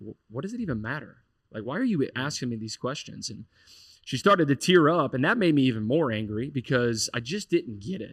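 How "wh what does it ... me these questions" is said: haughty, superior, very arrogant and dismissive tone. Retelling his own reply when asked about belief: imitating his own arrogant tone. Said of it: "in just kind of a very arrogant way".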